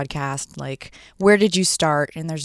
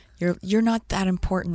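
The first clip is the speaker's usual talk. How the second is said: screaming, yelled loudly; 4 semitones higher, 3 dB quieter than usual. Retelling how the boyfriend screamed on the cliff ledge: imitating someone screaming. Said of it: "my boyfriend was screaming at me".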